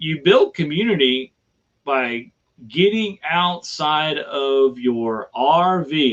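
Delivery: slow, deliberate, each word laid out with care. Making a point about building community: slow and deliberate. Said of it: "I said it slowly on purpose".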